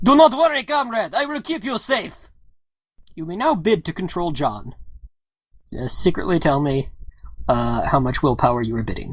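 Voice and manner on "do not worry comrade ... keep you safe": put-on heavy, thick Russian accent at very high pitch. Narrating a game scene, voicing the driver speaking to the player, thick russian accent. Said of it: "you hear a thick Russian accent tell you".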